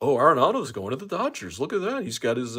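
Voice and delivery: loud, swooping sports-reporter delivery. Complaining about reporters who have to be first, speaker does the Mo voice. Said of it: "I'm doing my Mo voice".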